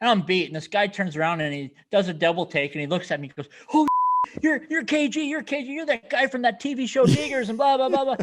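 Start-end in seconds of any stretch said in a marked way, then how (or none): 3.7-8.2 mock starstruck screaming, high and excited. Retelling a fan recognizing him in an airport line: imitating an excited fan screaming. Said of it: "And he's screaming".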